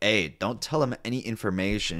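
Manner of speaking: normal talking voice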